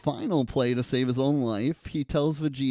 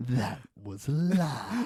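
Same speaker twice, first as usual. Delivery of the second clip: imitated dramatic whisper. Quoting a favorite line from the episode: imitating a dramatic whisper. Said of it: "the way he dramatically whispers".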